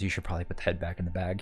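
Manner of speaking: whispering. Voicing a character who leans in to a player's ear: whispering in someone's ear. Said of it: "whispers in your ear and says".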